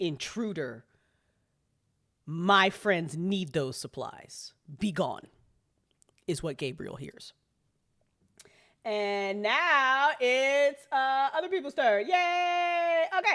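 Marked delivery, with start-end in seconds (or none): 0.0-5.3 very low, hushed, barely voiced whisper. The spider speaks back into Gabriel's mind, in a very low whisper. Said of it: "you just hear a very low whisper".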